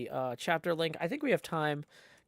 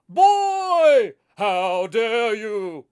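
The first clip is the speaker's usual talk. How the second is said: booming, clenched, slow, drawn-out strongman voice; 6 semitones higher, 13 dB louder than usual. Demonstrating the voice they do for Queequeg, strongest man in the world voice. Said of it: "the strongest man in the world voice".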